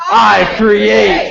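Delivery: super powerful, mighty, strong, rough-edged delivery. Leading listeners in saying it together, now like they're super powerful. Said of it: "say it like you're like super powerful".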